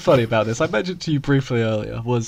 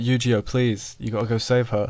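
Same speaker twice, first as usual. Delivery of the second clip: normal talking voice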